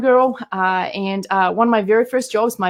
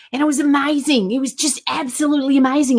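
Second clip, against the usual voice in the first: playful put-on Australian accent; 5 semitones higher than usual. Speaker recalls being in downtown Sydney after the corporate job, in an Australian accent. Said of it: "now I'm doing my Australian accent".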